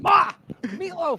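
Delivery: very high yell, reined in, held back. Doing a familiar quote, quoting a held-back yell. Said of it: "I didn't want to yell too loud when I did Ma the meatloaf".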